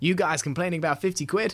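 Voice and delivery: poor attempt at American accent. Speaker quotes American fans who messaged in about ticket prices, bad American accent. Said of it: "Not my best accent".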